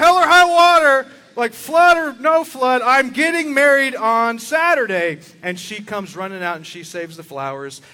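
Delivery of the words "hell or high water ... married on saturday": shrill, high, full-volume screaming. Speaker retelling a bride holding her wedding flowers during a house fire, imitating someone screaming. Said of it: "she's just like screaming like".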